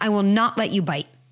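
steady, calm, sturdy firm tone. Parent stopping a child from biting, in a firm, sturdy tone. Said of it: "My tone is purposely firm, not scary, firm, sturdy".

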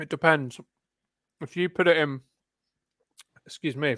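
talking with mouth half full of food. Debating a point with co-hosts while eating, talking with mouth half full. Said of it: "Your mouth half full voice".

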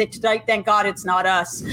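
ordinary delivery

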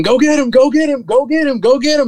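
shrill, very high scream, repeated over and over. Retelling a partner urging him to chase the turkey: imitating Terrence screaming. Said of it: "he just starts screaming".

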